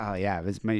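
ordinary talk

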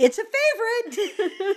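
very high, loud yelled shout. Retelling calling up to someone on an escalator: imitating own yell. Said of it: "I yell up at him".

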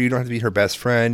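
ordinary delivery

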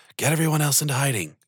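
soft whisper in character. Voicing a character telling Raymundo to hide everyone: whispering softly in character. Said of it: "kinda whispers softly".

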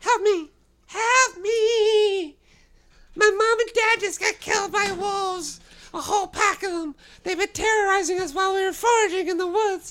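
put-on very high, loud little-girl scream. Voicing a little girl screaming for help in the distance: screaming little girl voice. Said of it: "This girl's giving a high description and it screams".

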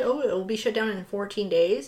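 ordinary delivery

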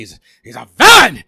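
acted yelling delivery. Imitating a film line, as asked by another speaker: Al Pacino as J. Jonah Jameson. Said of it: "I can't do Pacino as Jameson".

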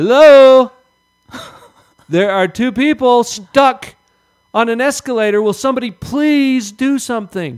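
shrill, very high, very loud holler. Retelling a commercial where a man is stuck on an escalator, retelling a holler. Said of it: "he hollers out".

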